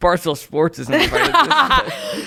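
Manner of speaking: very high, loud, drawn-out jeer through laughter. Retelling a man repeating it to his friend: imitating a man laughing while talking. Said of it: "laugh to his friend".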